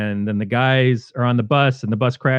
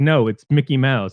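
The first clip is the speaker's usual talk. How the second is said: mimicked sarcastic retort tone; 3 semitones higher than usual. Retelling a movie character's reply to a phone caller: imitating a sarcastic retort. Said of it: "he's so sarcastic".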